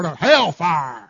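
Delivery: put-on country accent, lip curl. Showing everybody how to say the word, in a country way with lip curl. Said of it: "say it in a country way".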